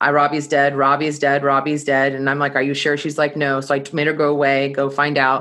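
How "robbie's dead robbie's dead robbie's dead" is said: ordinary delivery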